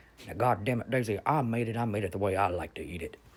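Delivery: put-on mumbling mutter under the breath. Recalling how Daddy answered Mama's complaint about his cooking, imitating Dennis mumbling. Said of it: "he'd mumble under his breath".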